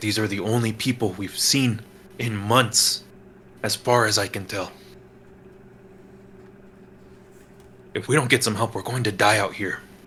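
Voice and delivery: hushed stage half-whisper kept under the breath. Narrating a scene, voicing Antonio as he answers another man; Antonio's rapid half-whisper. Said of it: "kind of rapidly whisper".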